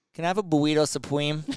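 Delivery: put-on Boston accent dropping r's. Retelling a drunk friend ordering at a drive-through: imitating Joe LaMonica's Boston accent. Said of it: "Boston people can't say ours".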